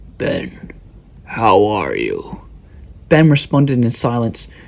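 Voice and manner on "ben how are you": low, eerie, creepy voice, slow and drawn out. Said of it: "The figure said in a low, creepy voice".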